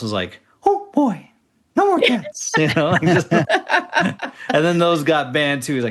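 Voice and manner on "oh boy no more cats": very high squeak, pitch swooping around. On a podcast, imagining Mickey Mouse's reaction, do a Mickey Mouse voice. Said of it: "best Mickey Mouse impression".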